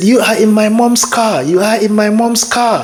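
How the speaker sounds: put-on high, stubborn, insistent child's shout. Retelling how a young niece shouted during a video call: imitating a shouting child. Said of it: "shouting at me to get out".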